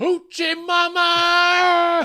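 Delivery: very high, very loud shrill yell, "Mama" stretched. Giving a word you yell when excited: excited yell. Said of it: "I gotta say it like that 'cause it's exciting".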